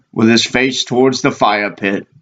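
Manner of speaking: ordinary delivery, nothing marked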